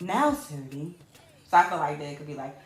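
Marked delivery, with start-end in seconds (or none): 0.0-0.9 put-on lady announcer voice, lower pitch. A show host calls out the next number, imitating the counter lady. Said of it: "Do I sound like the lady?".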